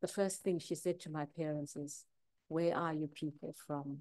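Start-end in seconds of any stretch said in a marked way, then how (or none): 2.5-4.0 put-on very sweet voice. Recalling a woman's first question to the speaker's parents, imitating her sweetest voice. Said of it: "in the most sweetest voice".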